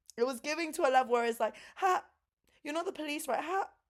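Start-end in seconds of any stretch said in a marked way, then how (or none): 1.8-3.7 high, anxious, nervous, paranoid little laugh. Retelling someone stuttering and acting suspicious, imitating a paranoid nervous laugh. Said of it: "bro's paranoid".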